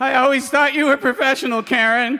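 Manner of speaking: high, sobbing, blubbering voice, acted out. Telling a story about a plane going down, quoting the flight attendants, imitating crying. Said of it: "They were crying flight attendants".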